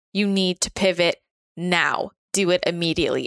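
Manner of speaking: imitated, put-on booming voice. Recalling a night, the speaker quotes a voice from the sky: imitating a booming voice. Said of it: "heard like this booming voice from the sky".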